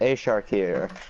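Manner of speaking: low, flat, deadpan monotone with no inflection. Introducing the commentary team for an Overwatch League semifinal, monotone. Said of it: "Sorry for my monotone voice there".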